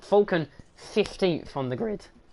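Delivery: weary, tired, voice cracking mid-line. Going through grid positions for a race: tired, voice cracking. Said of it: "Ugh, voice crack, tired".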